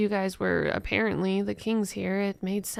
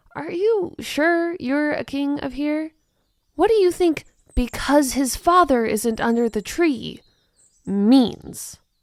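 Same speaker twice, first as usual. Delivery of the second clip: very loud, high, displeased and annoyed voice; 6 semitones higher, 8 dB louder than usual. Questioning whether the other character is truly a king, displeased. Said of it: "I've been exiled since before I was born. / She pulls out a piece of paper where is drawn the large family tree of [name]. / pointing out she's only twenty-five years of age".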